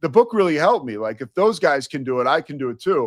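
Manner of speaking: plain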